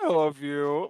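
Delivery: put-on slurred, drunken-sounding speech. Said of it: "he's slurring so bad".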